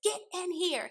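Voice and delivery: high-pitched, screamed, demeaning, belittling, acted out. Retelling a woman yelling at him to come in, imitating a woman yelling. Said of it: "she's still screaming and yelling".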